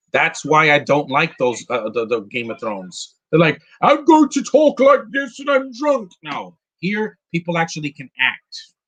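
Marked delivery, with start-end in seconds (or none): 3.8-6.1 put-on, very high posh British accent. Complaining about British accents in epic films, in a mock Game of Thrones British accent. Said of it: "British accents made a movie more epic".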